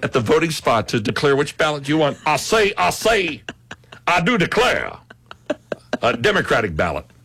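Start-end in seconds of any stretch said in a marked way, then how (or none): 2.3-7.0 cartoon rooster voice, higher pitch, slower. Joking about declaring a ballot at the polls, in a Foghorn Leghorn voice. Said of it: "Foghorn Leghorn".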